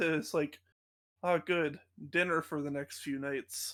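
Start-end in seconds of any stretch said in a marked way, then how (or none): 1.3-3.7 mumbled under breath, lower and quieter. Voicing Dean after he sets down the Skittle bags: muttered under his breath. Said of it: "he says under his breath".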